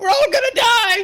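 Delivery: very high, very loud, terrified, panicked shriek. Voicing a character who stands up immediately and screams: screaming in panic. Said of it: "Orificus stands up immediately and screams".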